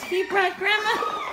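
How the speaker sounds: high-pitched laughing while crying.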